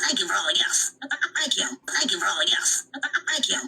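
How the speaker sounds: put-on sarcastic, mocking, rote and repetitive delivery. A woman mocks how she once spent thirty minutes thanking for gifts: mocking imitation of saying thanks. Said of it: "the first 30 minutes of my life saying".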